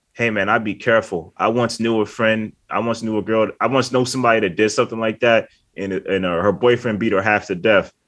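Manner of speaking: usual speaking voice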